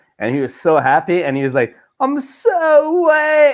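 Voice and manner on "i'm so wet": very high, stretched-out put-on English accent. Speaker retells what a guy said after being turned into a kid, english accent. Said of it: "in his English accent".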